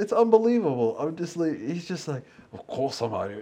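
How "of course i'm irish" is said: put-on full, all-in Scottish accent. Mocking an actor cast as an Irishman: Sean Connery's Scottish accent. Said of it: "just doing, like, the whole Scottish accent".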